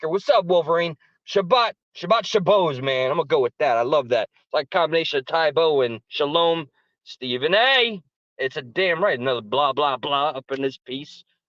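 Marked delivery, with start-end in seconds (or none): 0.1-3.1 hyped, on-air radio host party dj voice. Former dj shows the voice he opened shows with, his old dj voice. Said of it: "with this this voice right here".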